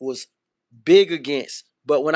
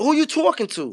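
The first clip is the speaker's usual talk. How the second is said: put-on New York accent, higher; 11 semitones higher than usual. Comparing how people say "talk": imitating a New York accent. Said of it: "That's some New York shit".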